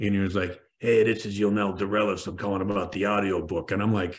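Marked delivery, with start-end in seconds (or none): 0.8-3.7 put-on Brooklyn tough-guy voice. A speaker casting an audiobook retells a phone call he got: imitating Yonel Dorelis. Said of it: "this tough guy from Brooklyn".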